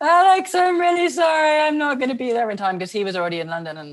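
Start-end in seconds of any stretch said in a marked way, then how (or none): 0.0-2.3 very high, tearful, drawn-out crying. Recounting phoning her husband after crashing his car, retelling her own crying. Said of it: "why are you crying?".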